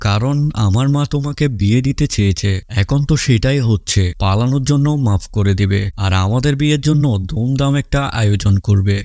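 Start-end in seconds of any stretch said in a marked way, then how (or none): none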